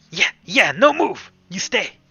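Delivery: put-on very loud, high goblin voice. Storyteller voicing a goblin that has returned from the other side, in a goblin voice. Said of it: "the goblin from the other side has also returned".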